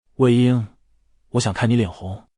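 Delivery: low murmur, near a whisper. Reading a scene aloud, a character leaning close to the other: low murmur. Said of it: "蓝忘机低语道".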